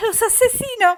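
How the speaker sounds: very high, very loud, shrill alarmed shout. Reading a story, a nun spots an intruder: shouting in alarm. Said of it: "gritó".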